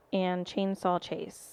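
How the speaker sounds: ordinary delivery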